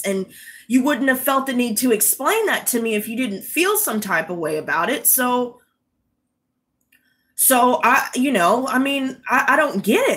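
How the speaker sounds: normal talking voice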